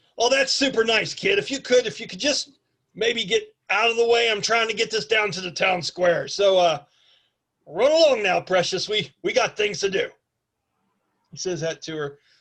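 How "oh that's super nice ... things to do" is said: put-on heavy, streetwise, tough-guy Brooklyn wise-guy accent. Game master voicing a character in a D&D session: Danny DeVito tough-guy Brooklyn voice. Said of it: "try to do a tough guy Brooklyn accent".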